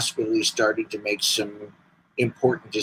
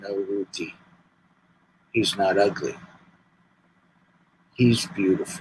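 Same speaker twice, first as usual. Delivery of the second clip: put-on Lithuanian-accented speech; 3 semitones lower, 5 dB quieter than usual. Retelling how grandmother comforted the speaker's mom, in broken Lithuanian accent. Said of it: "in her broken Lithuanian accent".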